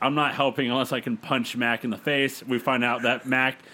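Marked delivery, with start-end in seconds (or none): none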